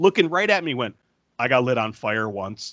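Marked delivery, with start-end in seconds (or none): 1.4-2.7 mock deadpan delivery, slower. Retelling a story, speaker quotes the popcorn girl's boyfriend, imitating his deadpan delivery. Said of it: "her boyfriend just is like deadpan".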